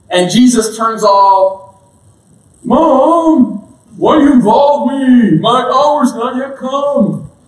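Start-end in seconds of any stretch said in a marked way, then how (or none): 2.6-7.2 slow, high drawl, "mom" stretched out. Retelling a Bible story, Jesus answering his mother, Napoleon Dynamite voice. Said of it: "I was trying to sound like Napoleon Dynamite".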